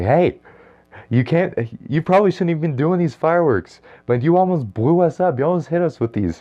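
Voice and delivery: shrill, very high, scared yell. Retelling yelling at people setting off fireworks in a parking lot: retelling a yell. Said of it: "I yelled at these people in the parking lot".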